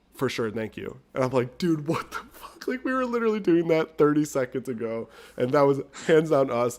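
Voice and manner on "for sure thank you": dry, flat, expressionless deadpan delivery. Retelling how the other person answered a worker's warning, retelling a deadpan reply. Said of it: "Gavin deadpan is like".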